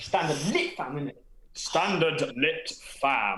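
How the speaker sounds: heavily exaggerated, thick put-on posh English accent. Asked to say a phrase in a thick British accent, doing a posh British accent. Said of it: "say standard lit fam in a thick British accent".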